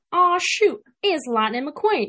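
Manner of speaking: put-on high-pitched country accent, rolling. Showing the impression the speaker always starts with, a Mater country accent. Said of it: "The country accent, it just comes right out".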